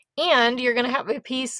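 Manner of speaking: voice cracking, breaking mid-word on "piece". Explaining crafting supplies to viewers when the voice cracks. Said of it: "sorry, voice crack".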